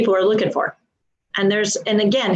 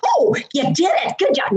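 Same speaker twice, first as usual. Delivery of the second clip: loud, shrill, high-pitched burst of voice; 9 semitones higher than usual. Contrasting the wanted deep support voice with a loud, shrill voice. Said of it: "Not that loud, shrilly thing".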